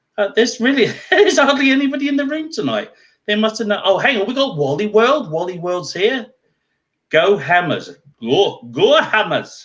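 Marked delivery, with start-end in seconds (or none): 7.1-9.4 pseudo Scottish accent, very slow and drawn out. Spotting a fan in the room, the speaker cheers: pseudo scottish accent. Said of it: "I was doing it in a pseudo Scottish accent".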